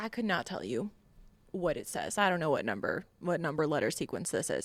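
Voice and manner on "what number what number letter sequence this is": ordinary talk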